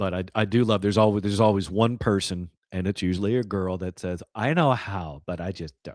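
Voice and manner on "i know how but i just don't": play-acted condescending, demeaning, a little superior tone. Quoting a girl who knows how to change a tire: imitating a demeaning tone. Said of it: "it's a little demeaning".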